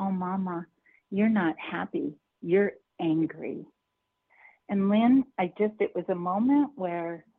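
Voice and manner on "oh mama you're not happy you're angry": quiet, little voice. Retelling what a child in the back seat said to the mother: little child's voice. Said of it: "I hear this little voice".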